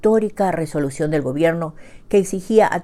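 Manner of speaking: ordinary delivery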